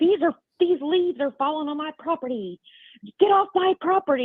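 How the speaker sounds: high, angry, mild hollering yell. Retelling how a neighbor came out and shouted at a friend: imitating a neighbor screaming. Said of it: "the neighbor comes out screaming at him".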